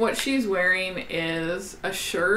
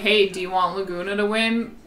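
ordinary delivery

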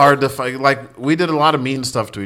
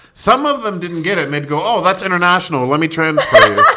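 usual speaking voice

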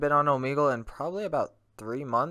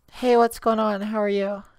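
put-on very high girly voice; 10 semitones higher, 5 dB louder than usual. Speaker deciding to troll others by doing a fake girl voice. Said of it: "I may as well do the girl voice troll".

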